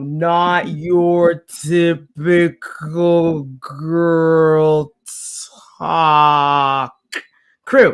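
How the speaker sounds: put-on very slow, stretched-long slow-mo girl voice. Repeating the crew's name so listeners catch it: slow-motion speech. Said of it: "I'll say it in slow mo".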